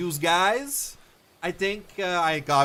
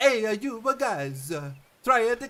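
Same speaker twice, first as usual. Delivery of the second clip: French accent drifting into Italian sounds; 7 semitones higher than usual. Trying a french accent again after being told it sounded italian, french accent that sounds italian. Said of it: "Each more Italian than the last".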